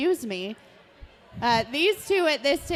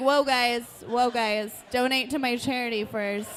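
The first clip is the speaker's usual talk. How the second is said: plain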